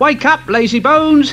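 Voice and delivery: put-on loose, rough London Cockney accent. Voicing Thomas the tank engine, in a sort of Cockney voice. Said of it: "Thomas has a sort of Cockney voice".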